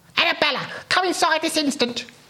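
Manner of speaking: put-on old woman voice, shrill, very high scream. Narrator reads a story as an old lady calls a girl inside, screaming. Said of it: "screamed an old lady".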